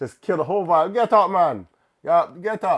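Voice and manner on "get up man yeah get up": put-on Caribbean accent, louder. Retelling a proposal, imitating an onlooker telling the man to stand: imitating a Caribbean bystander. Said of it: "that one Caribbean person that's watching the situation".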